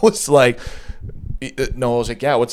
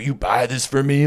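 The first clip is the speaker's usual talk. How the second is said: mock-drunk slurring tone. Retelling what a man said when handing over a beat box, imitating a drunk man. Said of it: "Like all drunk".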